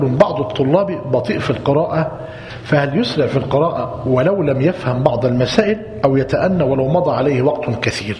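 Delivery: normal talking voice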